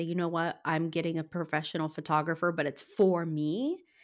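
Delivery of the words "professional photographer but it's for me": normal talking voice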